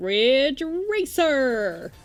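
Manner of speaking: put-on arcade announcer voice, high and loud. Trying to do a remembered voice from memory, Ridge Racer announcer voice. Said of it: "Let's see if I can do the voice".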